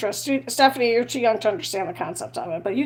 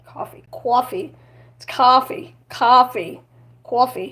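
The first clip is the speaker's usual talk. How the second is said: put-on New York accent. Trying out the accent from an SNL sketch, Coffee Talk New York accent. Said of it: "That's a New York or New Jersey accent".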